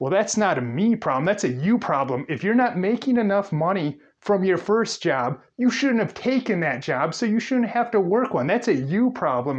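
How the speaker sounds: sneering, snide, dismissive, mocking tone. Retelling a man's remark to the listener, mocking his snide tone. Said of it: "he had that very snide tone of voice".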